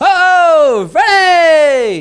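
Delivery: mock very high, very loud, shrill swooping excited shriek. Imitating how Flash sounds when excited: put-on excited voice. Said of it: "when he's excited, he's all".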